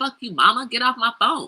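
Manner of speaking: mock blunt, rude, disrespectful, dismissive tone. Imagining snapping at one's mother on the phone: mock rude retort. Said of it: "I was like".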